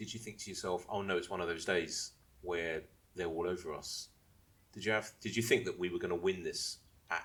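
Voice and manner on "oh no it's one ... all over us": usual speaking voice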